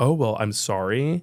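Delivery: mock condescending tone. Retelling how people react to hearing someone doesn't believe in God: imitating a condescending tone. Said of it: "that condescending thing".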